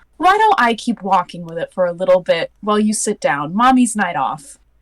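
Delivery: gentle, very calming, soothing tone. A mother acts out how she'd reply back in Elvish, in a very calming tone. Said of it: "respond back in Elvish in a very calming tone".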